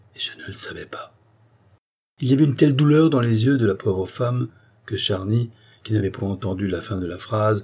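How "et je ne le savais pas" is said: barely audible whisper under the breath. The queen adds this to herself after seeing Charny, added very quietly. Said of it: "qui tout bas ajoutait".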